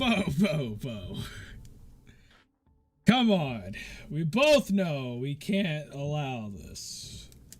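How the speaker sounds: very slow, chuckling, swooping delivery with laughter. Voicing a character who walks out to confront another: laughing a bit while talking. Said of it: "he just starts laughing a bit and he's like".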